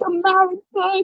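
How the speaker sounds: very high, teary, sobbing crying voice. Retelling what he said in full tears, imitating someone crying. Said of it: "He's like crying".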